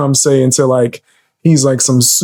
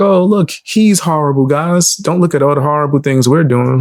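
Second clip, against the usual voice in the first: normal talking voice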